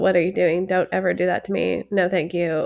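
mock dry, flat, unimpressed deadpan. Retelling how the husband answers the toddler's pretend tickle: imitating a deadpan reply. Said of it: "deadpan stares at her like".

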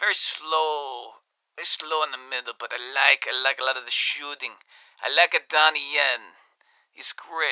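slipping into a bit of an Italian accent. Praising an actor from a movie during a phone call: sounding Italian. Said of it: "I know I sound Italian right there".

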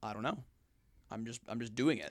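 put-on flat delivery. Recounting an interview answer, imitating Alex Honnold's deadpan. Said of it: "He's really deadpan honest".

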